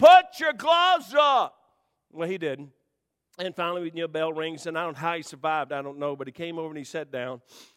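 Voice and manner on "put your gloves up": very loud, very high, shrill, dragged-out scream. Retelling a fight he watched, acting out his own scream. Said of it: "And I'm screaming".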